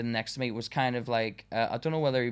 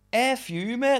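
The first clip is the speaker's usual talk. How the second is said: put-on very high, half-shouted, snappy; 12 semitones higher than usual. Retelling an argument before being fired from a job: retelling a shout. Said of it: "sort of shouted it".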